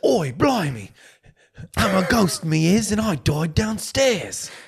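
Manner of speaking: put-on British accent. Mocking a co-host's attempt at a ghost's words, in a mock British accent. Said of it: "I was trying to do British".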